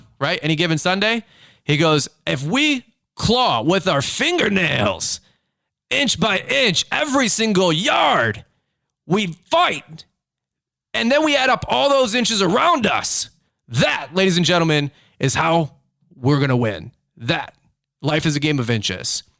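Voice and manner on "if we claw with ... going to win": horrible, high-pitched pep talk voice. Quoting a coach's speech from Any Given Sunday: horrible Al Pacino impression. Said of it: "That was a horrible Al Pacino print impression".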